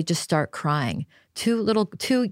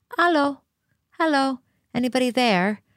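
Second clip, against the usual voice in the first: very small, tiny, high little voice; 7 semitones higher than usual. Retelling how she crept up to the fence and called out in a very small voice. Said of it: "in a very small voice goes".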